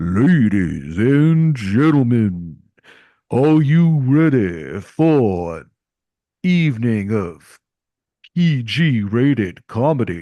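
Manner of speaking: grand, booming, very slow announcer voice. Retelling a young announcer opening a comedy show: imitating a deep older-man voice. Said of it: "a really deep voice of, like, an older man".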